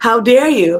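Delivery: plain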